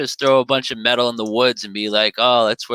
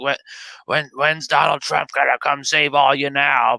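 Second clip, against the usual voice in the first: put-on frantic ranting voice, higher pitched; 3 semitones higher than usual. Retelling how Alex Jones called out the Q narrative: imitating Alex Jones going nuts. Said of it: "He was doing his whole spitting everywhere".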